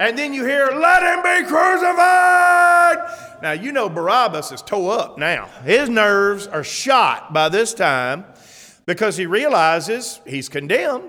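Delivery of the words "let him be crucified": very high, drawn-out, angry mob crowd shout. Speaker acts out the crowd that Barabbas hears; mock-angry crowd shout. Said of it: "The same angry, emotional voices saying".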